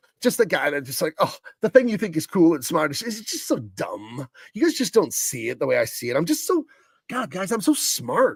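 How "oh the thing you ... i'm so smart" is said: pompous, smug, scoffing know-it-all voice. Describing an astrophysicist as a scoffer, the speaker mimics him in a mock-scoffing voice. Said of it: "he's a scoffer".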